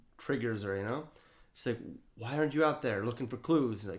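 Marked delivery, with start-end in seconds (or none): none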